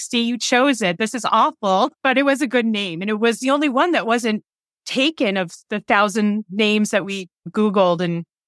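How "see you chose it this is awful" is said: ordinary talk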